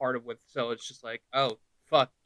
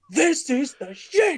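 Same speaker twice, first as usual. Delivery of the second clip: very high, slow, drawn-out exclaiming; 12 semitones higher, 4 dB louder than usual. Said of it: "sounds exactly like Bum Reviews".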